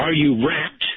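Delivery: gruff, nasty-sounding, terrible voice. Retelling what a man said during deep meditation, imitating a gruff voice. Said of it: "in a terrible voice, gruff, gruff voice".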